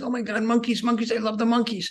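put-on thrilled, gushing, high, excited little-kid voice. Retelling a four-year-old grandchild seeing monkeys at the zoo: imitating an excited four-year-old. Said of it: "he got so excited".

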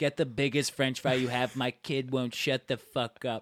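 hushed stage whisper aside. Retelling how mom asked the waiter for a fry: imitating mom's half-whisper. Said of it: "She whispers to the waiter".

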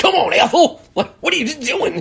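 very high, loud, hollered hillbilly voice. Recalling a weird Tom Arnold cameo: Tom Arnold's weird hillbilly impression. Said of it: "doing like his weirdest like hillbilly impression".

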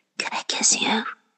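whispering. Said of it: "I just had to whisper that into your ear".

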